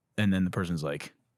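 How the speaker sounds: usual speaking voice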